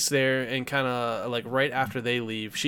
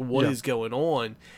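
very slow, drawn-out, panicked, freaked-out outburst. Describing a film scene, imitating Bond freaking out. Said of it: "Bond's, like, freaking out".

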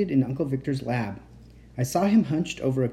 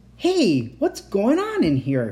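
startled, high, swooping cry of surprise; 7 semitones higher, 4 dB louder than usual. Stepping into a room, a character cries out in surprise. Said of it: "he cried".

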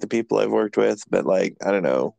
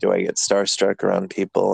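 ordinary talk

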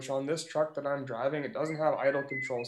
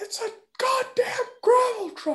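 screaming, very high-pitched and very loud; 8 dB louder than usual. Retelling a dispute with a caller, the speaker voices him: retelling a scream. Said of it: "he's screaming at me".

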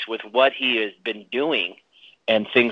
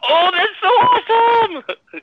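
very high, drawn-out little-girl squeal, acted out; 5 dB louder than usual. Telling Nikki how they pictured her reacting to a scene, imitating Nikki squealing. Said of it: "squealing like a little girl going".

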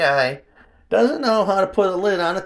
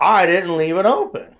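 ordinary talk

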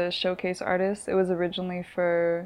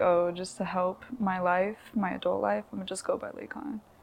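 usual speaking voice

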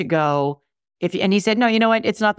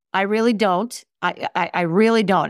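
normal talking voice

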